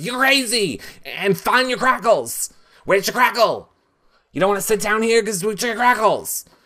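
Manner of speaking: shrieking, very high, screaming rant. Retell how Jason went at Shelby, right in her face, imitating Jason screaming. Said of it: "screaming in Shelby's face".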